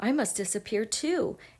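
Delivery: plain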